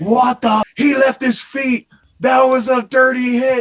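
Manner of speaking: mock furious shriek, pitched way up, loud. Recalling Kaliev getting flattened, the speaker relives jumping up: retelling an angry scream. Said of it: "I jumped up and started screaming".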